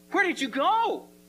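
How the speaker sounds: mock shrill thrilled voice. Explaining a Bible verse, the speaker repeats a woman's question, acting out an excited question. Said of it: "she's saying this with excitement".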